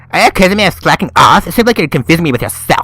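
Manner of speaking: high, put-on girly voice. Reading a character's retort aloud in a quarrel: girly voice. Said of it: "I'll just give her a girly voice".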